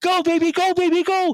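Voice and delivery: mock very high, distorted, yelling announcer voice. Complaining about TV announcers, imitating the screaming color commentator. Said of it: "screaming and yelling".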